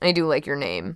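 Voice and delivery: soft, indistinct mumble under the breath. Narrator reads her line as she turns back at the door: mumbled. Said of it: "she mumbled".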